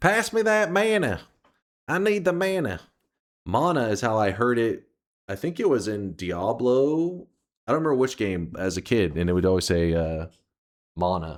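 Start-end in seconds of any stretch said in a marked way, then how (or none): 0.0-2.8 high, put-on, rural country-style Southern accent. Joking about how the word mana sounds: mock redneck Southern accent. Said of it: "a really redneck way of saying it".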